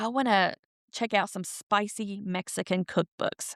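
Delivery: put-on whisper. Retelling a library TikTok where an older lady asks the librarian, retelling a whisper.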